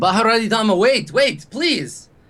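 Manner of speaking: pleading shout. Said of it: "like, shouting at him".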